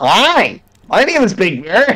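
very slow, drawn-out puppet-bird voice. Retelling how a friend voiced Big Bird: imitating Matt's Big Bird voice. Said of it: "Matt's just turned into".

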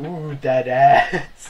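loud exclaiming. Imagining what a friend would say about the scene: imitating Phil. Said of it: "he'd be like".

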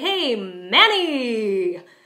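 excited Manny, stress on Man, long ny. Greeting Manny when very excited: stress MAN, stretch out ny. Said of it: "I'm drawing out the second syllable of his name, but the stress is still on the first syllable".

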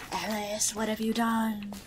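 creepy put-on voice. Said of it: "creepy voice Jess that's like".

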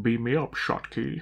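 put-on Scottish accent.

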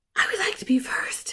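airy, high-pitched, breathless and breathy voice. After a long silence, a friend springs up to volunteer first, in a breathless, high voice. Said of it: "she said in her breathless, high voice".

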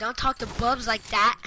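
normal talking voice

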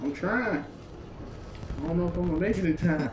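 high, frantic pleading.

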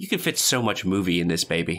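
normal talking voice

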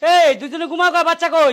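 high, slow, loud calling out.

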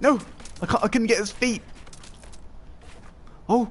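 panicking. Mid-game, failing to land a tree snipe, panicking. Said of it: "I'm panicking".

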